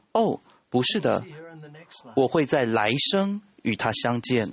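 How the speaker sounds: ordinary delivery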